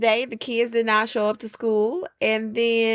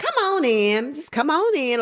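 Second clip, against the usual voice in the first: small, high-pitched country-style voice; 4 semitones higher than usual. Retelling greeting an upset parent: imitating own high-pitched country tone. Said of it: "my little high-pitched country tone".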